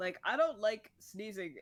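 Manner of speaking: breaking voice, cracking mid-line. Speaker in casual conversation with a friend: voice cracks. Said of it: "Ignore the voice crack that happened".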